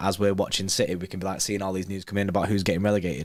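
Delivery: very fast, low, run-on rattled-off ramble. Talking football predictions, saying it really fast. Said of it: "I said that really fast".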